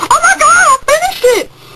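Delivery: excited high squeal.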